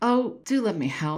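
earnest, pleading, begging. Narrating a woman asking a staring man to let her help, pleading. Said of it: "Eliza pleaded".

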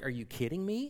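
mock dumbfounded disbelief. Retelling a woman's reaction when he said they should get married, acting out dumbfounded disbelief. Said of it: "she's just dumbfounded".

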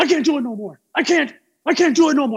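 frantic, high-pitched, nerves-shot panic. Retelling a man who tenses up mid-session, imitating a panicked freak-out. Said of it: "he just starts freaking out".

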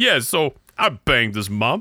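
put-on Brooklyn New York accent. Speaker joking about suddenly sounding like someone from Brooklyn, put-on Brooklyn accent. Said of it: "you're suddenly from Brooklyn".

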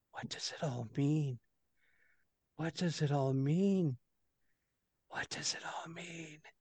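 very hushed, very quiet whisper, repeated over and over. A game master voices a man muttering to himself against a wall, whispering. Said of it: "It's more like a whisper".

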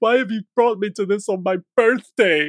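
put-on very high, frightened little whimper. Recalling turning to mum during a scary show on their birthday: retelling a childhood whimper. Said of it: "whimpering like".

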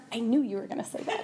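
quiet muttering under her breath. Recalling what her mom said during a visualization exercise, muttered under her breath. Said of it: "under her breath".

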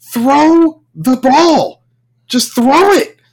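slow, drawn-out hollered yell. Recounting a ball game, the speaker reenacts yelling from the side: retelling own yell. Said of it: "I'm yelling from the side".

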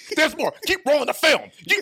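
belted out, full bravado. Retelling the clowning of a player's worst moments: loud boisterous Stephen A. Smith voice. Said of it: "as only Stephen A Smith can do in his provocative, loud bravado, boisterous voice".

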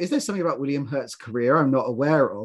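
plain

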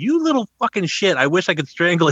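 mock furious, high-pitched angry yelling. Retelling yelling back at a thirteen-year-old in a game lobby, the speaker is retelling a yell. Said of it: "I'd be yelling back at him".

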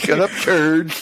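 high cartoon teenager voice with slurred, lisped "S". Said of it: "every cartoon teenager with braces now".

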